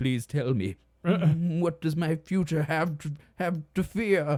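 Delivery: put-on high, loud, slow old-man voice. Imitating a movie Scrooge asking a spirit about his future: Jim Carrey's old-man Scrooge voice. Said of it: "Jim Carrey doing, like, an old man".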